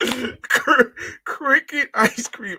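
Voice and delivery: words spoken through laughter, high and very slow. Reading out a food name, apologizing to folks: laughing while talking. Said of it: "I'm sorry for laughing".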